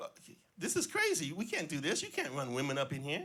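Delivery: put-on, worked-up, astonished, swooping excited voice. Retelling a coworker's reaction to the plan: imitating excited surprise. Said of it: "all excited and surprised".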